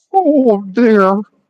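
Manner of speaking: high cartoon bear voice. Speaker shows off an impression, Winnie the Pooh impression. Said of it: "That's my Winnie the Pooh impression".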